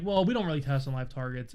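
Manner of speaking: ordinary delivery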